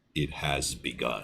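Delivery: very low, quiet, soft intonation. Thanking a viewer for a super chat on stream: Shang Tsung voice. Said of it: "In the Shang Tsung voice".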